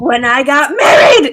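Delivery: slow, drawn-out, mild shouty complaining. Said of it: "She's just screaming at the lady".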